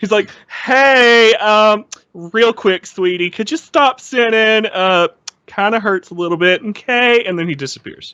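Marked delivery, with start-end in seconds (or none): 0.5-7.2 slow, flamboyant camp voice, pitched up, "hey" drawn out. Acting out a line as Jesus: flamboyant Jesus voice. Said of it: "Jesus is flamboyant as shit".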